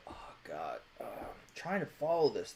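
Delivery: whispered, muttered mumble under the breath. The narrator voices Mr. Gabriel watching foreign television, muttering under his breath. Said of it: "just muttering under his breath".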